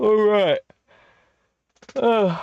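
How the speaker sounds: words stretched by a loud, very high yawn. Talking about movies after a huge week, the speaker says this while yawning. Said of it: "sorry, I'm yawning".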